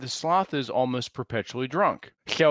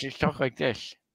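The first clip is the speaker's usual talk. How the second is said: put-on soft, slurred, drunk sloth voice.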